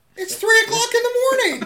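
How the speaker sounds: shrill yell, very high and very loud. Complaining about his father's late-night TV, the speaker's voice goes really high-pitched. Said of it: "As his voice gets really high-pitched".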